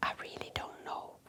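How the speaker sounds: whispering. Answering what there is to lose: whispering. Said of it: "And I notice you're whispering".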